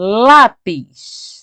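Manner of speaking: stressed "lá" syllable.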